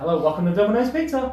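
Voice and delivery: high, loud, quick, perky tone.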